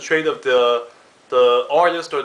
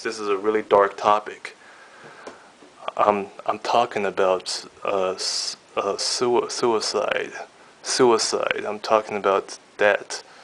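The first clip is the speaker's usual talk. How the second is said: low, hushed whisper; 5 semitones lower than usual. Leaning in close to the camera to bring up a dark topic: whispering. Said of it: "to whisper it to you guys".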